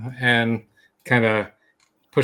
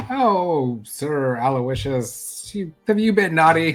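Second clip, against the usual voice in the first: put-on very slow, high, drawn-out baby talk; 5 semitones higher than usual. Playing a character cuddling a small creature, baby talk. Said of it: "just kind of baby talking him".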